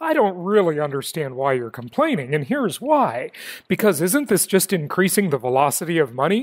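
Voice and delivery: tongue-in-cheek, sarcastic tone. Having warned listeners the comment is sarcastic, the speaker delivers it sarcastically. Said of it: "this is a sarcastic comment".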